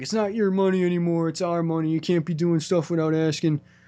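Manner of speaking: angry, stern, scolding put-on voice. Recapping an episode where Bryan walks out of the room, in a put-on Bryan voice. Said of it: "I don't know why I gave him that voice".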